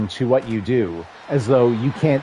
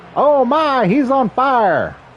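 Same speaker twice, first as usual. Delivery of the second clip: bad Southern accent, very high, swooping pitch; 13 semitones higher, 4 dB louder than usual. Calling a video game play like its announcer: poor Southern accent. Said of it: "I somehow did a poor Southern accent".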